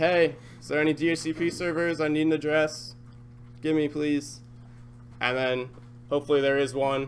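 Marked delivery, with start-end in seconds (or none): none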